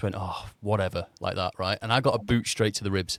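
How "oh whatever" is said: mock-frustrated muttering grumble under breath. Retelling answering a training instructor who threatened him, muttering under breath. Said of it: "under my breath".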